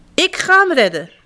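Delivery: shouting out. Squirrel, searching with friends for a missing one at a cliff edge, calling out. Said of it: "riep eekhoorn".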